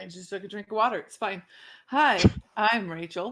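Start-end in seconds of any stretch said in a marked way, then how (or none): 1.9-3.3 stiff, robotic, machine-like delivery. Introducing herself to the group after a drink of water, like a robot. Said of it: "I said that like a robot".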